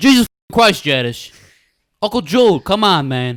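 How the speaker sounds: high-pitched, very loud, belted outburst. Asked by the others to do the Janice one, a Tony Soprano impression. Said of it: "Do the Janice one".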